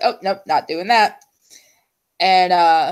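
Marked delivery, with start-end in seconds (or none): none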